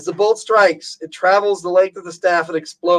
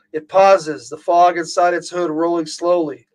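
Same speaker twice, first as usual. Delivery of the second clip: ordinary delivery, nothing marked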